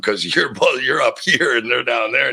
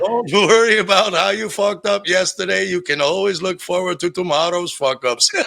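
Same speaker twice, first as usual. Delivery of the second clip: joking put-on Indian accent, pitched up; 8 semitones higher than usual. Retelling a funny video of a man joking like a guru: imitating an Indian guru accent. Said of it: "he's talking like a guru".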